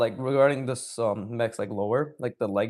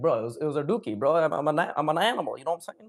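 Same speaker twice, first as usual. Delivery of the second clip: put-on man speaking with a Toronto accent; 3 semitones higher than usual. Telling a made-up story, voicing the dragon's reply to the army, in a Toronto man's accent. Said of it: "he has a Toronto man's accent too".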